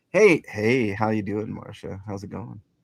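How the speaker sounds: put-on, mock seductive, sexy voice. Greeting a newly arrived caller: put-on sexy voice. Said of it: "talk on your sexy voice".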